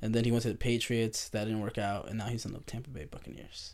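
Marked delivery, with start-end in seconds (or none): 2.1-3.7 disapproving, bad-news tone. Telling another speaker where a player ended up, saying it like a bad thing. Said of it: "It sounded like that was a bad thing".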